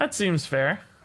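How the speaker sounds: dry, sarcastic tone. Reacting to the opponent's lucky card draw: sarcastic. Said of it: "I'm being sarcastic".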